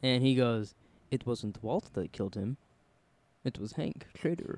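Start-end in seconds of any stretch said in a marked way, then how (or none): 1.1-4.6 badly done, breathy, hushed whisper. Retelling the scene where Gus goes up on the hill, in a bad Gus impression. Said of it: "that was the worst Gus impression ever".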